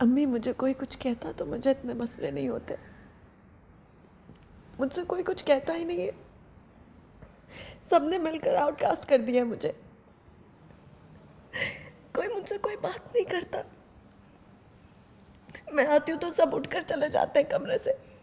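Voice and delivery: sobbing, tearful, crying through the words. A daughter tells her mother everyone shuts her out, crying while talking. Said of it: "बेटे मत रो".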